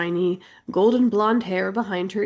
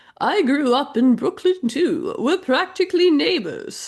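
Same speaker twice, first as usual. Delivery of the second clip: posh rich-lady voice, pitched up; 7 semitones higher than usual. Missus Winchester, beaming at the housekeeper applicant, in a rich person voice. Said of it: "that's just my default rich person voice".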